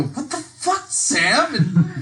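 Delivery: through clenched teeth. Player's character, watching a companion run off into the mist, through clenched teeth. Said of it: "through clenched teeth".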